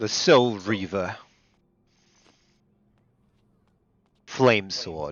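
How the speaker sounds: put-on New York, Queens accent. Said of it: "Why did you say that like you're from New York?".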